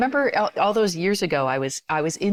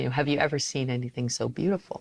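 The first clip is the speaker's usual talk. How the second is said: mock crying while speaking; 3 semitones lower, 4 dB quieter than usual. Retelling what a weeping man holding his baby said, imitating tearful speech. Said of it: "he just says through these, tears".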